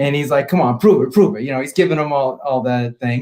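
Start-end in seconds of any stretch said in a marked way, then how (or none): 0.5-1.4 put-on heavy, laid-on, thick Brooklyn accent. Retelling an uncle challenging a stranger on a plane: thick Brooklyn accent. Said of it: "that accent and everything. And so it's real thick".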